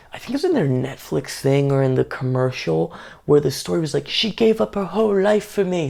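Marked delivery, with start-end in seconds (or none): 4.1-5.9 really bad, clumsy fake English accent, pitched up. Retelling what he said in a Netflix show or commercial, in a really bad English accent. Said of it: "doing a really bad English accent".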